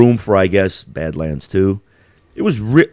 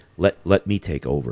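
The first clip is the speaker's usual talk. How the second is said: put-on computer assistant voice, lower and quieter; 6 semitones lower, 7 dB quieter than usual. Retelling a movie scene where the computer talks to him: Jarvis voice. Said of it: "he has kinda like that, um, Jarvis voice".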